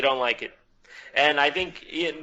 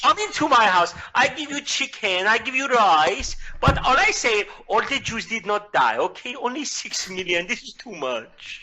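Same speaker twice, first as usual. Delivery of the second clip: imitated Persian accent; 7 semitones higher than usual. Doing a bit about an Iranian president: imitating a Persian accent. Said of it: "I can do a perfect Persian impression".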